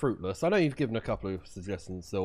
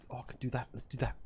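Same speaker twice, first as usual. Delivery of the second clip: fake South African accent, much quieter; 3 semitones higher, 8 dB quieter than usual. Gamer talks through their own moves around cameras in a game, put-on South African accent. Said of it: "I don't know why I've gone South African".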